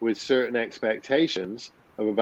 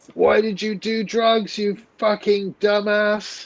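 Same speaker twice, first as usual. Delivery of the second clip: put-on, shrill, very high screaming; 9 semitones higher than usual. Speaker recounts his Iboga experience, imitating the voice screaming at him. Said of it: "the Iboga was screaming at me".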